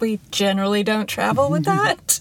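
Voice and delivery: ordinary delivery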